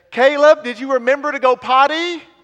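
loud, high carrying call. Retelling a mother calling to her son on the bus: retelling a mom's loud call. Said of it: "in a loud voice she says".

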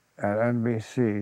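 ordinary delivery

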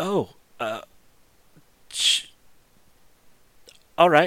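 halting, slow, hesitant delivery with a catching hitch. Voicing the blind unicorn told a dragon waits outside: hitch in her voice. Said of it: "You can sort of hear the hitch in her tone".

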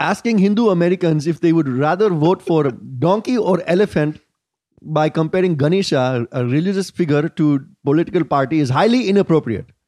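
put-on spoken in Indian accent. Host reads an outraged person's tweet aloud in an indian accent. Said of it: "I don't know if you can tweet in an Indian accent".

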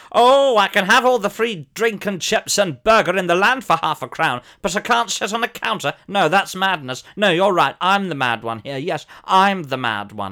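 sarcastic shout.

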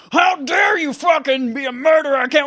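shrill, very high, drawn-out yelling scream. Imitating a game character screaming at people in a crowd: imitating Deacon screaming.

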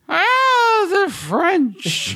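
put-on drunken, very high voice, drawn-out "oh". Retelling a commercial, imitating drunk Orson Welles. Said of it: "he's so drunk".

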